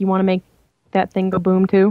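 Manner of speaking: mocking, snide, pointed and sarcastic. Voicing a character pointing at a locked door, sarcastic. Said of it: "sarcastically say".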